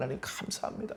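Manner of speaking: soft, inward, whispered speech.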